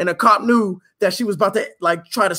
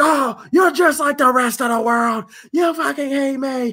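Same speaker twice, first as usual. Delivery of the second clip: high, screaming, accusing tone; 7 semitones higher than usual. Retelling how a woman in the car started screaming at the speaker, acting out screaming. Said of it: "and starts screaming at me".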